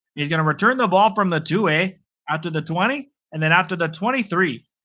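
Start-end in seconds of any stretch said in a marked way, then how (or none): 0.2-2.0 Canadian-sounding accent with eh at the end. Calling a football game's play-by-play, Canadian accent. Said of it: "I sound like a Canadian here".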